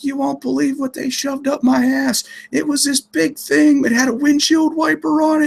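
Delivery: put-on very high, woozy, drugged-sounding screeching. Recounting coming out of sedation and screaming at their wife, retelling screaming. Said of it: "I'm screaming at her saying".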